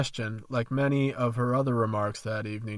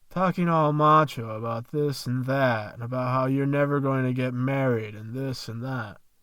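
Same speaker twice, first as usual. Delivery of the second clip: usual speaking voice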